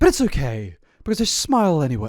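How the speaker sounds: put-on British English accent. Speaker reads aloud a woman's Tumblr post, in a British accent. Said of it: "I don't know why I'm giving this a British accent".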